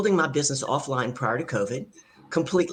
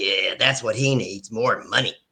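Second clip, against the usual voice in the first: mock grumble under breath, much lower, slower; 5 semitones lower than usual. Retelling a workshop audience member's remark: imitating a grumble under breath. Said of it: "he grumbled under his breath".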